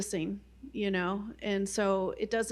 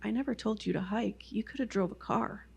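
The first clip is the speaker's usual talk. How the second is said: much quieter put-on voice. Retelling a hike story, the speaker voices God's reply, real quiet. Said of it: "I just heard God's voice real quiet".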